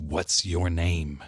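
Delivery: growling voice. Retelling a vision where a hound speaks to a man: imitating a growl. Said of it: "and the hound growled".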